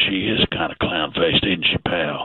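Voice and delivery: hushed, voiced stage whisper. Retelling what someone leaned over and said: imitating a half-whisper. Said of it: "He leaned over and whispered".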